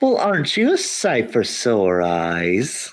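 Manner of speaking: woman's voice with the word "eyes" drawn out. Game master voicing a familiar woman who suddenly speaks to the party, in a female character voice. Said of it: "you hear a very familiar female voice".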